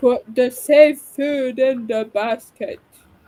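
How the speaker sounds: eerie, sinister, creepy and unsettling voice. Riffing on a friend's story with a Silence of the Lambs quote: creepy Silence of the Lambs voice. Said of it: "using a Silence of the Lambs right now".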